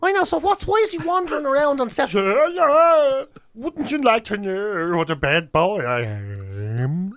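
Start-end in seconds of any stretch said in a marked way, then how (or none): 2.1-7.2 strange slow swooping voice, am stretched out. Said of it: "It's the strangest thing".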